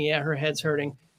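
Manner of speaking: normal talking voice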